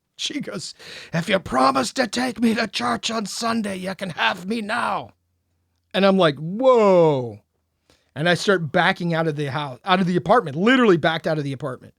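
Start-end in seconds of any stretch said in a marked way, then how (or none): 1.1-5.1 put-on speaking in Irish accent. Retelling what she said to the speaker, in an Irish accent she never had. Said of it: "in an Irish accent that she hasn't had at all".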